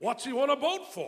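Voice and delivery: demanding, insistent voice. Narrator reads Henry's friend questioning Doc about Henry, demanding. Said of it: "His friend demanded".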